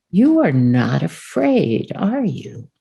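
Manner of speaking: menacing, evil-tinged sinister voice, swooping pitch. Retelling a meeting, the speaker quotes a cardinal leering at the sisters: imitating a cardinal's evil voice. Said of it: "evil in my voice there".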